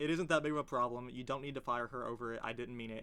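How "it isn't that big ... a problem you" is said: ordinary delivery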